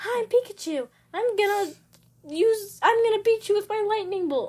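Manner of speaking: put-on play-acted, high, excited, playful, boastful kid shout. Imitating a younger brother who screams while playing: imitating a screaming brother. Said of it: "he's just screaming or, like".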